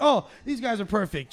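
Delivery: normal talking voice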